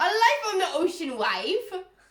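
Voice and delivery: shrill, booming, loud, high-pitched Irish accent. Reading aloud from a book from 1904, Irish accent. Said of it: "Why am I Irish all of a sudden?".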